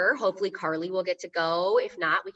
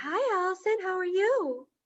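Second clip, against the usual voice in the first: very high-pitched, slow, drawn-out voice; 12 semitones higher than usual. Former librarian mimics coworkers copying her greeting voice, high-pitched voice. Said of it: "talking in a high pitched voice".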